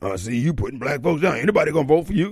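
deep voice with heavy bass. Imitating callers who phone in mad: imitating callers' deep bass voice. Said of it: "they call in here with bass in their voice".

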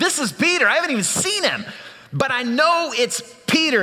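excited, certain, high, eager blurted delivery.

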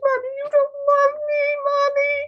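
put-on very high, sobbing, tearful little kid wail. Describing sensitive children, speaker acts out a kid bursting into tears, imitating a child crying. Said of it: "Another kid will burst into tears".

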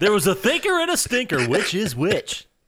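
high-pitched morning radio DJ announcer voice. Speaker presenting the second riddle to the others, in morning radio voice. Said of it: "my morning radio voice just popped out there".

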